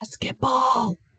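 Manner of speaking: soft, barely voiced whisper. Showing a class a hearing test, whispering words to guess: whispering. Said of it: "I'm gonna whisper some words".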